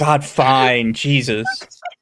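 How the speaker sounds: mock grudging, reluctant, giving-in voice. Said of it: "they handed it to the dub girl, and she was like".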